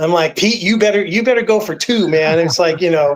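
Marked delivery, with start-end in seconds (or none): 0.4-2.4 put-on, hard-pushing urging yell. Retelling a reaction while watching the game: imitating own yelling. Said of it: "yelling at my phone".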